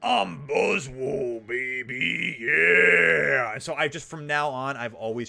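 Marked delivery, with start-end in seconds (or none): 0.0-3.5 loud, rough, very slow, drawn-out boastful delivery. Retelling a friend's audio message in a wrestler voice: Macho Man Randy Savage voice. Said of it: "Macho Man Randy Savage voice".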